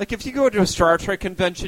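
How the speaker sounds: ordinary delivery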